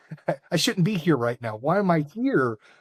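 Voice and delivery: put-on nervous, begging, pleading voice. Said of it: "shaking and nervous, begging".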